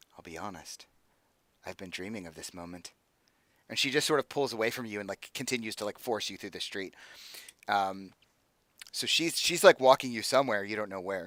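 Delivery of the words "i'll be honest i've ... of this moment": very quiet, confidential aside. Voicing a character who leans over to a prisoner: speaking quietly in character. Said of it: "leans over and says quietly".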